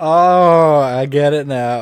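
loud, very slow acted sarcasm, stretched-out oh. Recalling what a guy said after a joke, imitating his sarcastic remark. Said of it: "He was doing it sarcastically".

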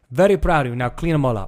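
put-on Italian accent. Retelling his dad's reaction after he cut down trees, in dad's Italian accent. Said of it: "in his Italian accent".

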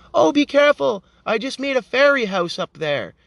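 small, meek, timid little voice. Retelling what a masked kid said while walking by: imitating a quiet, meek kid. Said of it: "kind of quiet and meek".

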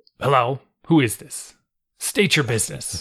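wary, defensive, guarded tone. Imitating how people came to answer the phone: imitating a defensive phone answer. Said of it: "it turned into very defensive".

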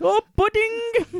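mock very high, gleeful, delighted little cry. Retelling a Big Brother contestant's reaction to pudding: imitating Shri delighted by pudding. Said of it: "sits up and goes".

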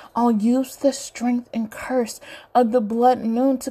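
plain reading voice

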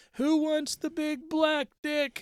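put-on very high drunken scream. Retelling a party where a drunk friend brought rum: imitating Pierre Trace screaming drunk. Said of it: "He's piss drunk, screaming".

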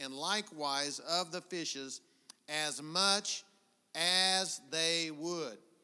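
very slow, halting, word-by-word reading aloud. Rereading a passage aloud for listeners, slower than ever, reading very slowly. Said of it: "I'm gonna read it slower than I've ever read it in my life".

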